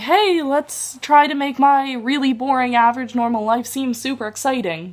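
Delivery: perky bubbly vlogger tone. Mocking the vlog style she dislikes, the speaker puts on a bubbly voice. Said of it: "that was my best attempt at a bubbly sounding voice".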